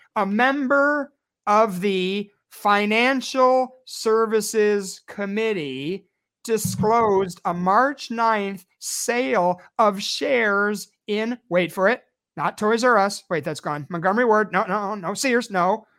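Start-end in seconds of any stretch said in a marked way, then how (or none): 0.2-11.4 much slower, slowed-down delivery. Repeating a congressman's stock-sale disclosure for listeners: said slower. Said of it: "Let me say that slower".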